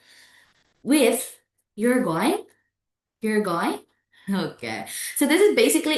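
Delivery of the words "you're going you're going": going rises in pitch at the end. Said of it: "indicates uncertainty or questions".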